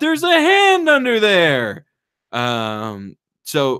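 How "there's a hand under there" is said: very high scream, swooping, slowed right down and drawn out. Retelling a movie scene where a nun stands up: imitating a nun screaming. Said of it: "a nun stands up and just starts screaming".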